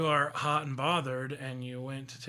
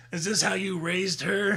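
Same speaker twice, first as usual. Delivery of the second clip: put-on loud, pitched-up middle-aged chain-smoker voice; 6 semitones higher, 6 dB louder than usual. Pretending to speak to the listener's parents, in a middle-aged smoker voice. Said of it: "doing like the middle-aged smokes 2-pack a day".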